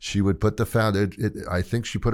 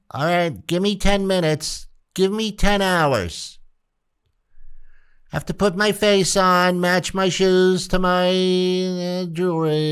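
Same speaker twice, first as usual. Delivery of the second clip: sarcastic, mocking, high-pitched put-on woman's voice; 11 semitones higher, 4 dB louder than usual. Acting out a woman getting ready to go out: mocking woman voice. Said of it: "that's the voice that I use when I'm mocking women".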